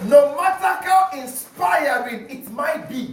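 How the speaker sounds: high, loud, fervent preaching shout.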